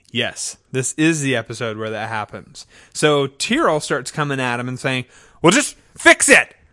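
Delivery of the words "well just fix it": loud, high shout. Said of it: "Because shouting".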